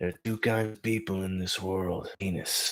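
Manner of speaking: put-on old western movie gunslinger voice. Doing a Clint Eastwood impression from The Good, the Bad and the Ugly: Clint Eastwood impression. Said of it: "if I go Clint Eastwood".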